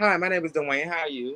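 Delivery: put-on, code-switched Valley Girl accent. Showing how the code switch sounds: code-switched Valley Girl voice. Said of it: "I code switch like a motherfucker".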